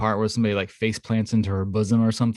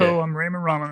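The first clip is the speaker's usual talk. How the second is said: squeaky puppet-like frog voice; 7 semitones higher than usual. Telling who plays the dad and how he sounds, Ray Romano impression, like Kermit. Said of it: "the guy sounds like Kermit the Frog".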